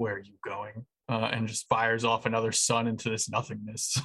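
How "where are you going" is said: soft, inward half-whisper under the breath. In a game, the narrator voices a character half-whispering to himself. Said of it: "just kind of whispers to himself".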